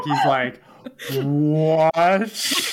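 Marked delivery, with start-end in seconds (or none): 1.1-2.6 loud "what", stretched out in slow motion. Imitating a character's stunned reaction in slow motion. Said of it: "Like, slow motion".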